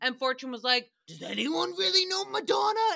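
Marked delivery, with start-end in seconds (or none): 1.1-3.0 deliberately lousy, rough, creaky voice, pitched up. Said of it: "trying to go on with the shitty impressions".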